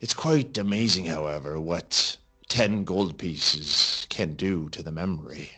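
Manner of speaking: whispering. Narrating a game scene, voicing a man whispering in a player's ear. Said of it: "he whispers again in your ear".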